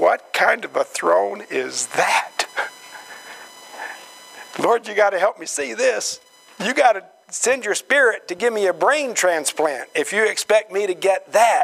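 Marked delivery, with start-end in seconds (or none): none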